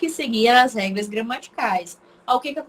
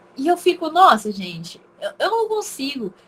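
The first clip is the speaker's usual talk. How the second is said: ordinary talk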